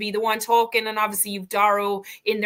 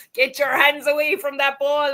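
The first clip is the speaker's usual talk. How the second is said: high, poorly done put-on Scottish accent; 5 semitones higher, 4 dB louder than usual. Imitating a referee shouting at players: imitating a referee in a Scottish accent. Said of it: "That wasn't my finest Scottish accent now".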